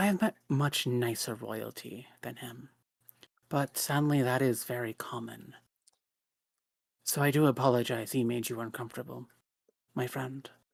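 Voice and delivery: soft, hushed, confidential half-whisper. Voicing a character keeping a remark quiet between two people: half-whispering. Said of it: "she kind of, like, whispers this".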